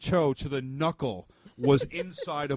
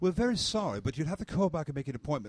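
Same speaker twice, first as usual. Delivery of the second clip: fake British accent in recorded-message style; 3 dB quieter than usual. Mocking a hospital's outgoing phone message, in a put-on british accent. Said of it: "with British accents".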